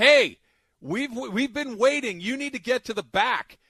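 very loud high-pitched yelling. Retelling yelling from a car window at a driver cutting the line, retelling own yell. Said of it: "rolled down my window and yelled out".

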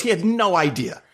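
ordinary talk

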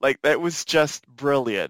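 ordinary talk

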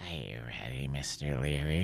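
very deep, odd, slow, drawn-out droning voice. Retelling getting on the table when Matilda came out, in Matilda's weird voice. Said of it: "she just had this weird voice like".

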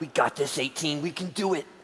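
hushed whisper. Encouraging a dinosaur mount by whispering into its ear: whispering. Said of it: "I whisper into his hole".

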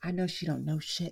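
put-on under-the-breath mutter. Retelling what a man muttered all through the shift, imitating muttering under his breath. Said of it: "like talking under his breath".

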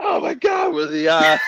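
very high, loud, stunned and excited disbelieving shout.

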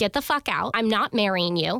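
put-on furious outburst, losing control. Retelling confronting him after his admission, re-enacting losing it, furious. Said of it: "So I just lose it on him".

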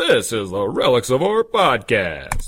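full-on, swooping radio announcer voice. Podcast host introducing the show, in a radio voice. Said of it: "I got the whole radio voice going on here".

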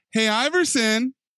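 mock very high, bubbly, syrupy, sugary fake-nice tone. Mocking how he greets iverson, the speaker mimics his bubbly, sugary tone. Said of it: "The bubbly, sugary tone of his voice when he's like".

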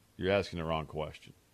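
snarky deadpan, very low, flat, level monotone. Retelling what the Alabama offensive coordinator answered you, in a Lane Kiffin monotone. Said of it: "that Lane Kiffin monotone delivery".

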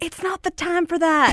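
mock high-pitched yelling. Recounting an Amber Alert during a movie, retelling a woman yelling out. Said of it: "one lady literally yelled out".

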